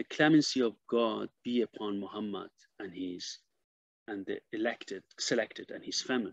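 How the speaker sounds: normal talking voice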